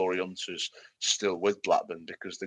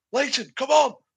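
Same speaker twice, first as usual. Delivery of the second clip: shrill, very high, loud urgent shout; 6 dB louder than usual. Retelling how someone shouted at a player not warming up: imitating Lowe shouting. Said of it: "Lowe was shouting".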